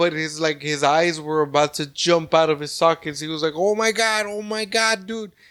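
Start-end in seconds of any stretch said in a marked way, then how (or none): 3.5-5.3 mock frightened, high, freaked-out exclamation. Speaker retells how a man reacted on facing the couch, imitating scared panic. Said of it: "like scared".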